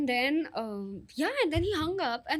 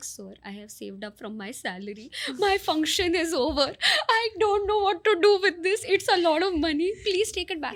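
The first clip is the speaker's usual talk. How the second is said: play-acted tearful weeping voice; 4 dB louder than usual. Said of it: "And I started actually crying".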